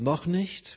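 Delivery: noch stressed, lifted high with a rise. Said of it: "die Betonung liegt als auf dem noch".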